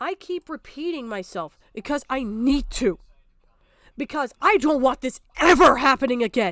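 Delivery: voice full of upset, emotional. Speaking about what happened to Jar, upset. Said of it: "Sorry for getting upset".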